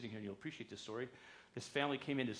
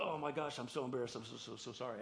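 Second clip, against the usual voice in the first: ordinary talk, nothing marked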